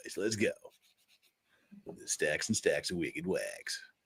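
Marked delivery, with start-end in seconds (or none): 2.1-3.8 very soft, hushed radio-host voice. Jumping into the news and weather, the speaker puts on a radio voice. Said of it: "Gotta have the radio puker voice".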